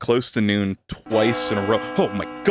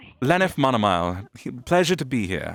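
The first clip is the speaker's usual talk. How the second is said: put-on just a slight hint of British accent; 3 semitones higher than usual. After being told to sound less British, a hint of British accent. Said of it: "a hint of Brit".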